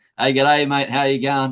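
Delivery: loud, broad New Zealand accent, laid on thick. Answering a listener's question about his Kiwi accent, broad Kiwi accent. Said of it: "I don't know if this Kiwi accent".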